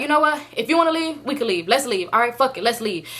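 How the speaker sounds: ordinary delivery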